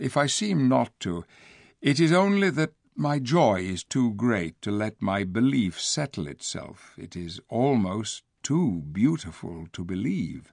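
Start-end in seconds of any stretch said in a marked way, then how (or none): none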